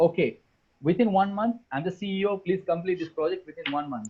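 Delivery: ordinary delivery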